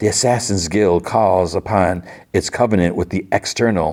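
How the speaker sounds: plain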